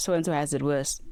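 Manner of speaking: plain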